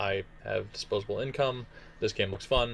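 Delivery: ordinary delivery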